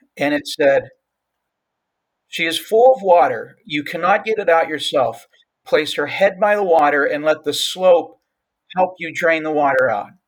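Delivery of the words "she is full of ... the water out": mock firm, no-nonsense voice. Retelling hearing an inner voice, imitating a firm voice. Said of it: "that voice grew firm".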